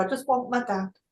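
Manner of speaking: put-on emotional, plaintive, childlike little-kid voice. Recalling what a mother said near the end, imitating a childlike voice. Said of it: "Like a little kid".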